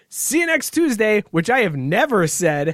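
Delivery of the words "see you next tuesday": put-on high little two-year-old toddler voice. Retelling how the two-year-old pretends to be the speaker: imitating his two-year-old. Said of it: "he will say".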